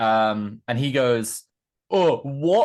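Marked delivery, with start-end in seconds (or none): 1.9-2.7 high, sneering, mocking "what", acted out. Retelling how a man mocked the speaker's question: imitating someone mocking. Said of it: "making fun of me asking what he says".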